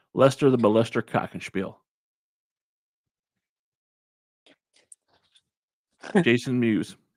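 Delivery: dry, expressionless deadpan monotone. Answering friends asking about a movie, deadpan. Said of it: "did you say it so deadpan?".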